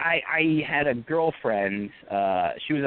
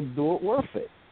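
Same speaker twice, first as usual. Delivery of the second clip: put-on accent from Haiti. Recalling a drill sergeant's talks in the military, doing Drill Sergeant Edwards' thick accent. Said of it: "he had this really thick accent".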